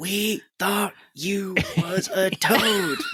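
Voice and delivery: high, very slow, put-on loud stage whisper. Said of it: "loudly whispering".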